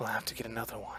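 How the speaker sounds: gentle, very quiet, hushed elf voice. Narrating a game, voicing an unseen speaker to a character turning to stone, in a soft elven voice. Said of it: "you hear in a soft, elven voice".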